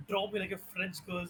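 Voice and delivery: ordinary talk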